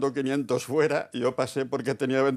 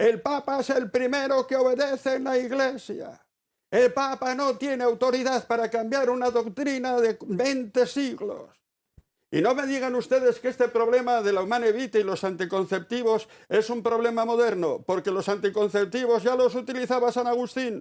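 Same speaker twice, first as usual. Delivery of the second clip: put-on shouting, pitched higher; 10 semitones higher than usual. Retelling a theologian's lecture to a packed hall: imitating someone shouting. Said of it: "empezó a gritar en francés".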